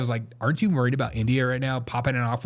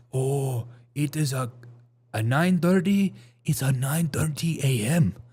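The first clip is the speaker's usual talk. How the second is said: very slow, overdone, exaggerated Korean accent. Imitating how Koreans answer what time it is, imitating a Korean accent. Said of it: "I feel like Koreans they".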